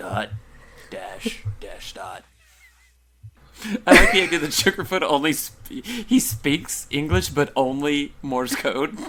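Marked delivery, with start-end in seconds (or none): 0.0-2.2 hushed, whispered evil demon voice. Voicing Sugarfoot speaking only Morse code, evil Sugarfoot voice. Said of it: "that's my evil sugarfoot voice".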